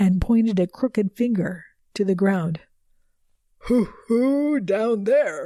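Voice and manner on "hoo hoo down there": eerie, spooky ghost-story voice, slow, hoo-hoo. Narrator reads what he said when asked about hell: spooky voice. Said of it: "he said in a spooky voice".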